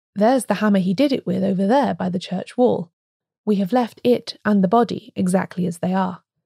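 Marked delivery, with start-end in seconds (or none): none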